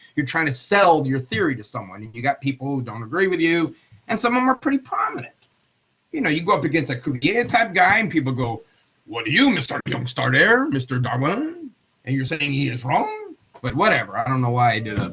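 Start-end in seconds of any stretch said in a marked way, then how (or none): 9.1-11.7 put-on, French-accented voice. Speaker acting out people challenging a scientist's theory, accidental French accent. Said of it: "Is that a French accent?".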